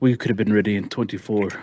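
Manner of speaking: muttering aside. After the airship deadline is announced in the game, Terran mutters under his breath. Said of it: "under his breath says".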